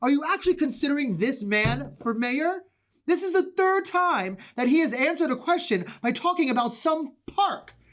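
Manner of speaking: agitated, worked-up outburst. In a mayoral debate, a candidate objects about his opponent; agitated outburst. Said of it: "please calm down".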